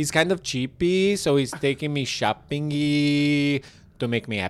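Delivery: put-on Brazilian accent, e added to shopping and cheap. Imitating a Brazilian woman from ninety Day Fiancé: imitating a Brazilian accent, adding E to words. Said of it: "a Brazilian chick on ninety Day Fiancé that adds E to every word".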